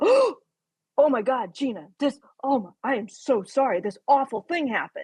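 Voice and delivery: stumbling, halting, horrified and shocked voice. Speaker acting out someone's shocked reaction to Gina, imitating a shocked apology. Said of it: "but the shock of".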